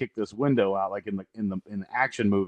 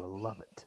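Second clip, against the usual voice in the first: very quiet, barely audible mutter under breath; 17 dB quieter than usual. Retelling a movie character's line: imitating muttering under breath. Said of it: "he says under his breath".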